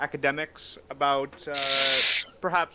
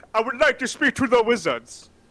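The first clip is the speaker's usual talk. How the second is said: loud, high-pitched, put-on Jamaican accent; 9 semitones higher, 6 dB louder than usual. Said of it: "My comrade here cuts me off".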